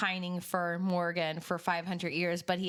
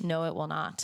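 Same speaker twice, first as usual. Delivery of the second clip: mock affectless, blunt, matter-of-fact delivery; 3 semitones lower than usual. Retelling a character's reply to a boast: imitating a flat affect. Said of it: "flat affect says".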